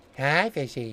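low, sultry voice. Asked to say hello to the fishies, greeting them in a sultry way. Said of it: "You said it in a sultry way".

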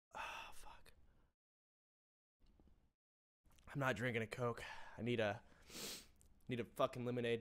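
crying while talking. A streamer, moved to tears on stream, keeps talking while crying. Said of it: "the only second time I've cried on stream".

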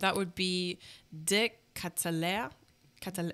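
French-accented pronunciation. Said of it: "I said it with a French accent".

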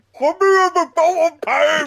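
shrill, very high, loud, drawn-out toothless voice. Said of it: "that's a good voice".

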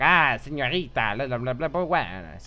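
put-on spicy Spanish accent. Suggesting how a character's voice should have been acted, spicy Spanish accent. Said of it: "a really spicy, like, Spanish chick do the voice".

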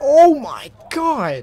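very high, very loud, shrill scream. Playing a game and streaming after losing at the gulag again, screaming. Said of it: "I didn't mean to scream in the mic there".

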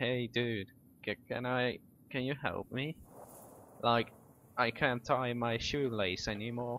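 relaxed, casual, laid-back stoner dude voice. Acting out a stoned-looking guy asking for help, imitating a laid-back stoner. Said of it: "That's the tone he says it's about".

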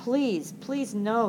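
croaked, pleading voice. He begs not to be taken to america, scared of that place, croaking. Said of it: "he croaked".

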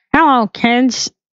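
bad, high-pitched put-on voice that misses. Answering a would-you-rather question, trying a bad Kermit impression. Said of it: "that does not sound like Kermit".

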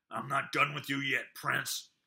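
growling. Narrator reading a fighter's words to the prince, growled. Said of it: "he growled".

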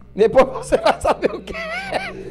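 high, slow, laughing teasing tone.

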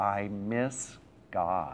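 put-on childlike sobbing. Retelling what a three-year-old boy said at bedtime, imitating a child sobbing. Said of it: "in between sobs".

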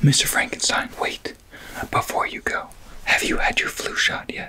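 whispered, nurse-like voice. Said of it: "And you did your first roleplay".

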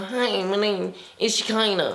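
put-on nasal, blocked-nose voice. Imitating how Shekinah speaks, as if the nose airways are blocked: nasal Shekinah impression. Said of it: "also she go".

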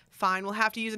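ordinary talk

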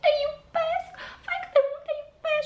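sugary put-on tone. Imitate a mother cooing over her baby in front of others, laying on a mocking saccharine voice. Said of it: "declarațiile tale super siroposizonate".

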